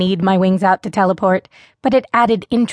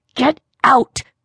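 sharp, high hiss; 5 semitones higher than usual. First-person narrator elbows Damien Merez, crouched beside them, and says it hissing. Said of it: "I hissed".

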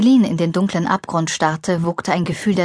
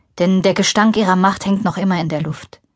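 ordinary delivery, nothing marked

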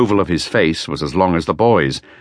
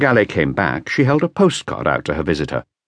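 plain

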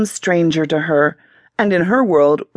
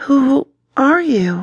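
sheepish, abashed, pitched up; 7 semitones higher than usual. A woman asks a man who he is, a bit embarrassed. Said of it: "she asked finally, a bit embarrassed for sounding rude".

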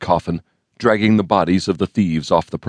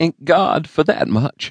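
very high, parched, dry, cracking voice; 9 semitones higher than usual. A woman answers the man who says the thieves are dead, in a dry, cracked voice. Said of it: "she replied in a dry, cracked voice".

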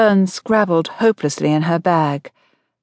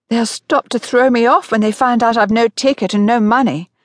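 high, frantic, panicked blurt; 5 semitones higher than usual. On the moving train, Fern tells Hope her worry, frantic. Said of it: "Fern said frantically".

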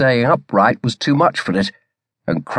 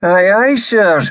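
put-on broad Scottish accent, laid on thick; 8 semitones higher, 4 dB louder than usual. The first lieutenant acknowledges an order to bear away; thick Scottish accent. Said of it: "his Scots accent thicker than Ramage had ever heard it before".

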